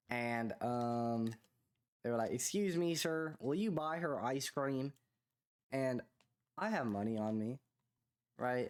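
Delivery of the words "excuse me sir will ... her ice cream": put-on Southern US accent, pitched up. Retelling what some people said to him, in a put-on southern accent. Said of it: "in like a southern accent".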